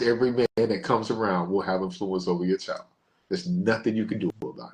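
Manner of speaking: ordinary delivery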